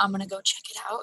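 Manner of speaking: hushed whisper. Playing a character sneaking up a trail, whispering to the party: whispering. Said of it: "I'll whisper".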